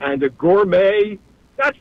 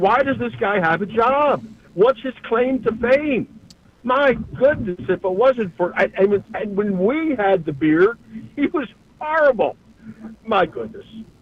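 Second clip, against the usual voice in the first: exasperated, thoroughly fed-up griping. A caller who couldn't get through finally vents to the host, frustrated. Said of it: "You sound frustrated".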